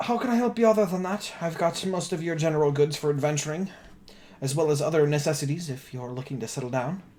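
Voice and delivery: put-on wizened, aged old elf woman voice. Voicing a wizened old elf shopkeeper greeting the players: wizened old elf lady voice. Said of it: "a very wizened old elf, eh, lady".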